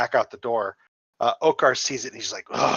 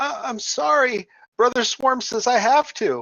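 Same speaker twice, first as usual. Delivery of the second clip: put-on very high, small, childlike little boy voice; 13 semitones higher, 4 dB louder than usual. Running a tabletop game, the speaker voices a boy for the players: little boy voice. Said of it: "he says again in his little boy voice".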